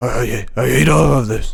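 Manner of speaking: loud, slow, rough, drawn-out bellow. Acting out Vince hating the whole plan: Vince McMahon voice. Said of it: "my Vince McMahon voice".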